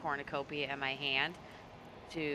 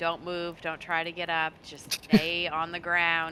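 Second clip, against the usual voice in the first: plain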